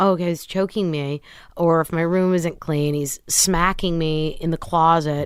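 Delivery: normal talking voice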